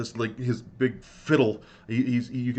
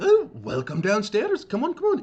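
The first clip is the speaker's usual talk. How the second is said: put-on very high, kindly, sweet, swooping old dwarf voice; 12 semitones higher, 4 dB louder than usual. Voicing an old dwarf innkeeper welcoming guests downstairs: sweet old grandpa dwarf voice. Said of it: "he's just this cute, sweet old grandpa type dwarf".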